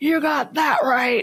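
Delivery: high-pitched, blunt scream, acted out. Retelling own reaction to a diagnosis explanation: imitating own past scream. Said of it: "I screamed".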